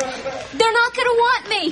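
frantic panicked voice. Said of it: "you're panicking".

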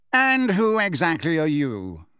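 haughty, bored, uninterested, lofty tone. Fudge asks Mrs. Fig who she is: bored and lofty. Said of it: "said Fudge in a bored and lofty voice".

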